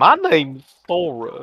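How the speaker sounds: put-on country accent. Imagining the game hero talking differently, speaker shows it: Sora in weird country accent. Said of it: "in a weird country accent".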